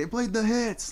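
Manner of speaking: acted, very high, thrilled excited scream. Recalling him screaming in the street after the band played: retelling an excited scream. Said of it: "he's screaming".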